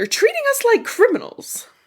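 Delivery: put-on Capitol accent, pitched very high. Recapping a scene where peacekeepers anger Effie, in Effie's Capitol accent. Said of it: "That was a pretty good capital".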